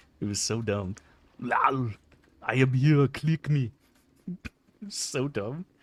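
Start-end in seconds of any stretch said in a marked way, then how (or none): 2.4-3.7 put-on loud, raised voice with Austrian accent. Recalling building a StarCraft unit just to hear it talk, do the Thor voice, Austrian Arnold style. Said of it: "Old Cyan had that Austrian Arnold voice".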